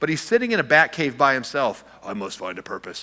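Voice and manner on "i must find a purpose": odd put-on superhero voice, dropping into a strange hush. Joking about Batman alone in his cave, doing Batman's strange voice. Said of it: "he talks in that strange voice".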